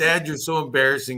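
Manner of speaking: complaining tone in an ordinary speaking voice. Retelling what his daughter once said to him: imitating his daughter. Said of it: "I remember my daughter saying once".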